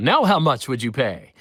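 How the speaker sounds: loud, put-on tv pitchman infomercial announcer voice. Recalling driving twelfth-grade teachers crazy, in an infomercial announcer voice. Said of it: "doing the voice like".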